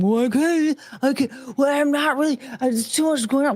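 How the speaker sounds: mock whiny, halting, hedging tone. Mocking a commenter upset at being called out: imitating a commenter whining. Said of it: "and you're whining, going".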